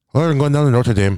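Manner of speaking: attempted Irish accent. Joking about Notre Dame with friends, the speaker tries an Irish accent. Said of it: "how do you do an Irish accent?".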